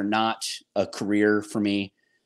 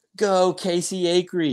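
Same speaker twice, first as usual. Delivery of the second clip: put-on yelling like a child; 9 semitones higher than usual. An athlete retells their son yelling their full name, retelling a son's yell. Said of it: "he's yelling like".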